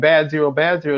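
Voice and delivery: plain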